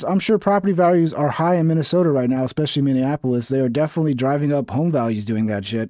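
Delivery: normal talking voice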